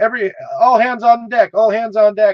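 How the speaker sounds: loud, high-pitched shouting.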